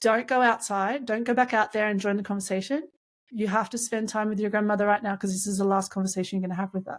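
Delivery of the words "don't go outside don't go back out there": ordinary delivery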